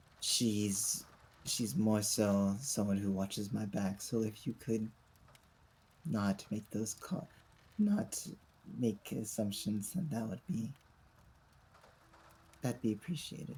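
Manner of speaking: hushed voice. Whispering back in character to someone who whispered an insult: whispering. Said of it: "I'm just gonna whisper back".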